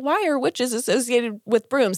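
ordinary talk

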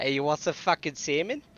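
loud, watered-down fake Boston accent. Arguing over whose accent is worse, a speaker does a put-on boston accent. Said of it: "it's a Boston person that's been living in Seattle".

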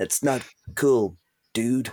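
put-on generic American accent. Acting out a reaction to a phone photo: generic american accent. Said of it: "generic American".

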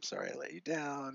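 put-on crying voice. Retelling an apology made while crying in a hotel room: imitating own past crying. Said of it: "and I'm crying".

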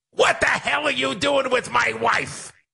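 loud, screechy comedian voice. Offering to read the line another way: Gilbert Gottfried voice. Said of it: "You want a Gilbert Gottfried?".

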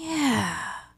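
put-on sedated drowsy voice. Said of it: "it's almost like she's on Xanax".

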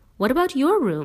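high, insistent, pressing, demanding tone. Allie asks the narrator about the narrator's room, demanding. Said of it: "Allie demanded".

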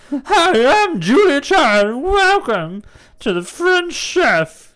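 very high, loud squealing frog-puppet voice, stretched-out "hi". Showing a friend why this would suit Snatch Game, welcoming viewers in a Kermit-like Julia Child impression. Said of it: "you sound like Kermit".

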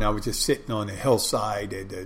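ordinary talk

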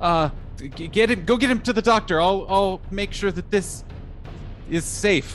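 shaky, panicked voice. Player voicing a character while fists pound on the door; shaky, panicked voice. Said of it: "in a very shaky, panicked voice says".

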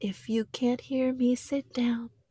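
hushed whisper. Demonstrating a preschool trick for getting everyone to listen, whispering. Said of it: "I am whispering".

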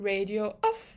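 small, timid, soft, tiny little voice. Retelling how he told an angry Charles to get off the radio; imitating a tiny voice. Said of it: "a tiny voice".

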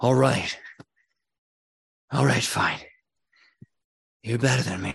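panting, breathless, rough winded voice. Narrating a duel, the beaten opponent concedes after a hard fall, panting, out of breath. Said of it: "and panting, he says".

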